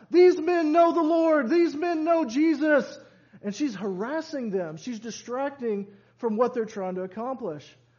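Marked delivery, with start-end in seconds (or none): 0.2-3.0 insistent, high, loud shouting. Retelling how a possessed slave girl followed and harassed Paul and Silas: retelling someone shouting. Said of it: "she is shouting out".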